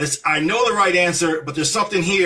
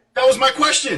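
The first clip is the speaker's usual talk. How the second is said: shouting, higher pitch; 7 semitones higher than usual. Answering a caller who keeps cutting in, yelling. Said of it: "why you yelling?".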